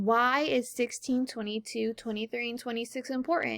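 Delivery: plain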